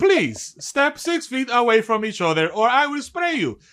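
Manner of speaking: high, automated machine announcer voice, like a recording. Describing distancing enforcement on the main strips, the speaker imitates an automated voice. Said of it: "it's just like an automated voice".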